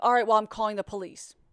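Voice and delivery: angry snapping tone. Retelling a threat on a phone call: imitating someone snapping. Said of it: "He's snapping, snapping, snapping".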